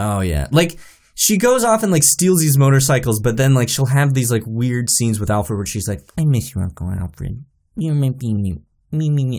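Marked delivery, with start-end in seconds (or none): 6.2-9.4 small, mousy, slow, drawn-out voice. Mocking a movie character's odd scenes with Alfred: mousy Batgirl impression.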